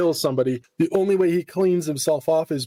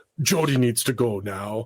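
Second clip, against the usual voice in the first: put-on vampire voice, lower; 4 semitones lower than usual. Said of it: "He just talks in, like, a Dracula voice".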